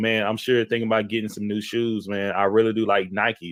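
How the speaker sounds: ordinary talk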